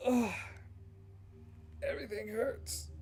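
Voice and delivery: put-on high, strained, pained voice of sick boy.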